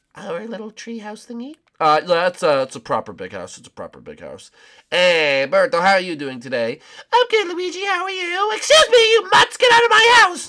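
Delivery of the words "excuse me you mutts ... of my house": very high-pitched, shrill, loud, furious yell. Playing a character who orders intruders out: yelling at someone. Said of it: "don't yell at Gunter like that".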